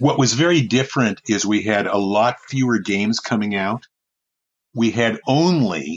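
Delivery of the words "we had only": sarcastic, much slower emphasis on 'only'. Speaker recalling the past games market, sarcastic stress on 'only'. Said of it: "you'll notice the sarcasm in my voice when I say only".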